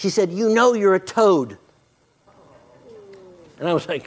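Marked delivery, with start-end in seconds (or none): 0.3-1.6 play-acted grandmotherly scolding, called out loudly. Retelling how a woman outside a store scolded a little boy: imitating someone shouting. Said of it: "she's shouting at this little boy".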